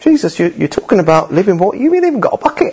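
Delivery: high, fast, scoffing woman's voice.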